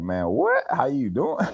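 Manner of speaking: very high, rude, dismissive brush-off tone. Describing how East Coast people answer a friendly greeting, mimicking a rude brush-off. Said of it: "they be like".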